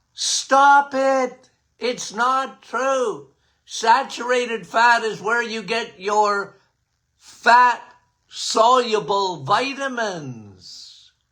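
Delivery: play-acted urgent, impassioned, preacher-style voice. Retelling how they protested against anti-fat claims: retelling own screaming. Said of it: "like John the Baptist in the wilderness screaming".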